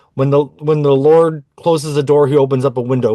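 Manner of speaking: ordinary talk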